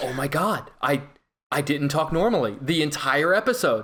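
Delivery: normal talking voice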